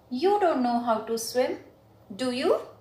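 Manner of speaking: rising intonation, pitch lifted upward on do you. Teaching intonation, repeating the sentence with rising pitch on do you. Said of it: "I'm going to speak this again with rising intonation".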